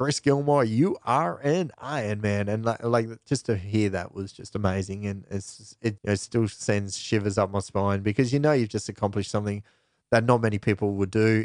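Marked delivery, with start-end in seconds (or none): 0.0-2.5 put-on slow, raised Hawaiian American accent. Imitating the commentator announcing an athlete who finished, in his hawaiian american voice. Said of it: "in his Hawaiian American voice".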